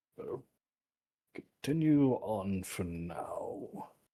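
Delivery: very slow, soft, tired, weary sighing words. Answering whether to keep searching, in character: sighing in character. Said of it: "just kinda sigh and say".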